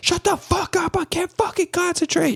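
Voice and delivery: very high, screaming outburst. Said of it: "they're all screaming".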